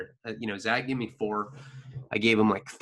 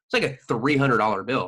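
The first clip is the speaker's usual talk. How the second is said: ordinary talk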